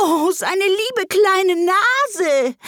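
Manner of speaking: very high, very slow, drawn-out anguished pleading. Narrating Alice crying out as a pan flies past the baby, in real anguish. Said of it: "in wahrer Herzensangst".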